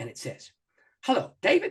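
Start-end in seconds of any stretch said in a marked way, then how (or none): 1.0-1.7 put-on southern accent with swooping pitch. Retelling a phone call from Maxie Dunham, in a southern voice. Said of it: "this southern voice speaks".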